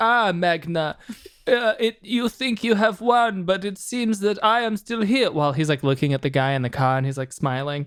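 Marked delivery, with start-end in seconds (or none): 0.0-5.3 vague, laid-on put-on German accent. Retelling a villain's line from the movie ending in a vaguely German accent. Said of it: "a very vaguely German accent that he's been putting on".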